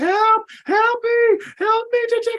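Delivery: shrill, very high, drawn-out screams. Retelling a story's plot, acting out Jennifer screaming. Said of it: "Jennifer is like screaming".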